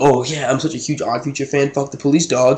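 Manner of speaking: scornful, derisive mock voice of a teen. Mocking a sixteen-year-old who knows three songs, imitating a poser fan. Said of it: "and you're like".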